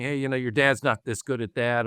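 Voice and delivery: ordinary delivery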